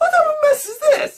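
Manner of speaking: upward inflection, rising pitch on the final this. Retelling own reaction, pointing out the inflection: rising at end on this. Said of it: "See how the inflection went up?".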